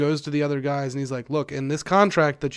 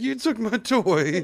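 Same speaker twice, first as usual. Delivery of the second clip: mournful put-on dog voice, pitched up; 7 semitones higher than usual. Voicing the dog after taking away her toy: voicing a sad dog. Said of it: "She's looking at me, like, so sad".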